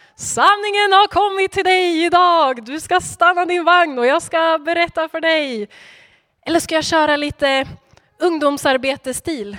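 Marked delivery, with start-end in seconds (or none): 0.2-5.7 put-on old-style prophet voice, crying out loud, pitched up. Imagining Philip hailing the courtier on the empty road, old prophet-style loud calling. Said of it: "med hög röst ropa typ".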